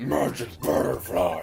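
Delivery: deep, low manly voice, loud. Showing how they now say a phrase, in a deep manly voice. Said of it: "in a deep manly voice".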